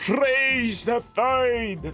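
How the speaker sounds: put-on Scottish accent. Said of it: "my best Scottish impression".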